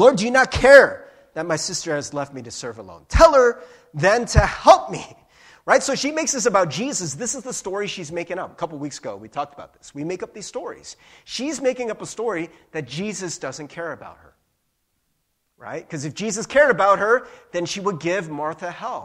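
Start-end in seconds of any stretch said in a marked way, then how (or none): 0.0-5.1 loud, furious outburst, blasted out. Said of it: "She explodes at Jesus".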